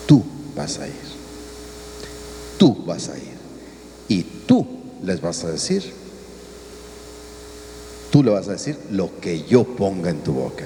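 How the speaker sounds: calm, soft, low, firm, insistent tone.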